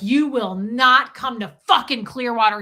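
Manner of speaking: acted, furious, loud, angry screaming. Retelling a phone call where Aaron threatened over a trip: imitating Aaron screaming. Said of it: "screaming at me".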